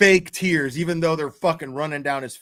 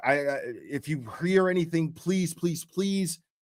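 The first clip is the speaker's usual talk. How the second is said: mock tearful, blubbering, sobbing plea; 4 dB quieter than usual. Retelling a man pleading for news on TV: imitating a crying man pleading. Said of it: "he's crying. He's a blubbering mess".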